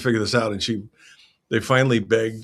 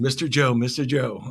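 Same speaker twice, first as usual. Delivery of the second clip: put-on small girl voice, shrieking, screaming; 4 semitones higher than usual. Retelling a little girl spotting him at a booth: imitating Maisie screaming. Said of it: "she starts screaming".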